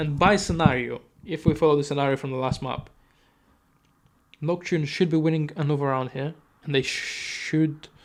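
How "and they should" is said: oddly spoken, very slow, every word drawn out. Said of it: "why am I speaking like this?".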